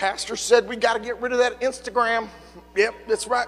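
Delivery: soft, put-on Southern hillbilly accent. Quoting what the pastor said; southern hillbilly voice. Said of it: "I just used a Southern hillbilly voice".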